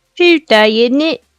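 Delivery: put-on Cockney accent. Saying a stock phrase to the group: Cockney accent. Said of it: "That's Cockney, what you just did".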